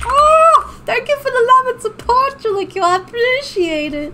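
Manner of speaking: voice climbing very high.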